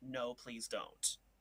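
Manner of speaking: light-hearted pleading. Describing how a voice could sound, the speaker demonstrates a light-hearted pleading tone. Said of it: "It's a very light-hearted, almost like a pleading".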